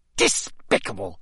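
furious, spat-out word. Furious as the dungeon rings with applause, a man spat. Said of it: "Crouch spat at Dumbledore".

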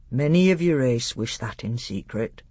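plain reading voice

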